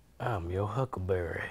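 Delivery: low, sultry, slightly gruff cowboy voice. Performing a line on request: sultry cowboy voice. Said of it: "Give me your, your most sultry cowboy voice".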